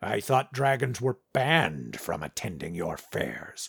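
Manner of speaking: low, quiet, bitter, resentful dragon growl. A narrator reads the line of Rangdor the dragon, a bitter growl. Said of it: "a note of bitterness in his growl".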